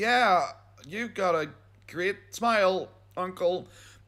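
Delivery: half-hearted, unconvinced tone. Acting out a reply to an uncle with bad teeth: acting out an unconvinced tone. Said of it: "the lack of conviction there ... It was that tone of voice".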